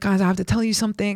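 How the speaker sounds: mock-panicked, panicky voice. Recalling a panic attack, the speaker quotes telling the others in the green room: retelling panicked speech. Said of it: "I had like a panic attack".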